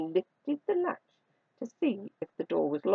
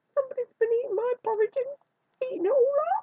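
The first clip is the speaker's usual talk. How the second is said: tiny, very high, squeaky little voice. Reading the bears story, Baby Bear speaks after Mother Bear: Baby Bear's squeaky little voice. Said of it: "in a squeaky little voice".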